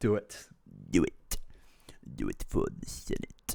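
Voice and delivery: sinister, hushed, breathy villain whisper. Urging Fraser to make the call: Palpatine voice. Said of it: "That's my Palpatine voice".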